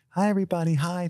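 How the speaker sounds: very high, sweet, sugary voice. Retelling how an actress greeted everyone: imitating Michelle Williams sounding sweet. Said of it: "she is as sweet as can be".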